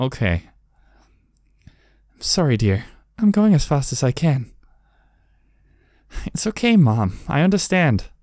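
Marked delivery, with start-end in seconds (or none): 1.7-4.5 smoother voice. Voicing the mom in a skit, in a smoother voice. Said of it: "I'm just going to do like a smoother voice".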